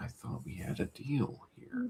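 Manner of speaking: hushed, breathy, quiet, intense near-whisper. Imitating the actor confronting Gale: imitating the actor's quiet intensity. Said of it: "It's what I call a quiet intensity".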